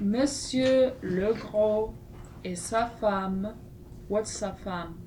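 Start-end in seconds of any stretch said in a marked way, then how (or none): 0.0-3.5 very slow, slow-paced reading aloud. Reading a French lesson passage aloud to the students: very slowly. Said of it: "we are gonna read this very slowly".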